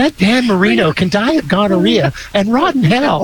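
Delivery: high, put-on old grandma voice. Repeating a joke line to see if it works in grandma voice. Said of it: "could I pull that one off in grandma voice?".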